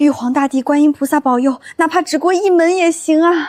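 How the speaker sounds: excited, eager outburst. Late at night in a family drama about a hard exam, loud excited shouting. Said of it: "吵死了！".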